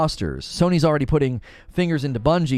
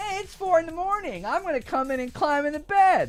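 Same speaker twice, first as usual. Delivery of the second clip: squeaky, very high, mocking voice; 4 dB quieter than usual. Doing an impersonation of the other speaker: imitating the other speaker. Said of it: "You want me to do an impersonation of you".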